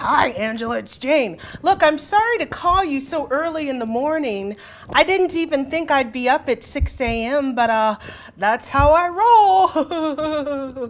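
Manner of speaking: rough, gruff, roughened voice. Retelling a colleague's early morning phone call: gruff voice imitating a colleague. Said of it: "maybe I should make my voice gruff".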